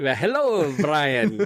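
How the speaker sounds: put-on drunken, tipsy pub-regular Irish accent. Greeting the host when asked to say hi, like a drunken Irishman. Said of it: "That was like a drunken Irishman".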